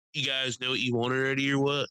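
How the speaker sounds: put-on rude, dismissive woman's voice. Retelling how a rude waitress talked to the next table: imitating a rude waitress. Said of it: "talking to them like trash".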